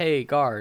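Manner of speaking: ordinary talk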